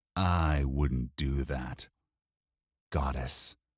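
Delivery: gentle, soothing, calming tone. A character cautions another character, in a soothing tone. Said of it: "in the soothing tone one uses on a drunken friend".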